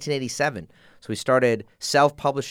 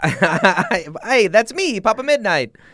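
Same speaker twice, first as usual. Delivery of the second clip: fake Italian accent, very slow and drawn out; 8 semitones higher, 5 dB louder than usual. Joking that a comic's title is their own name: put-on italian guy voice. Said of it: "Why am I talking like an Italian guy?".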